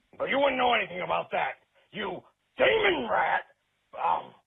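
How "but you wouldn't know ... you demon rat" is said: put-on raspy voice, ranting. Criticizing the host's impression and demonstrating it: Alex Jones impersonation. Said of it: "when you're doing an Alex Jones impersonation".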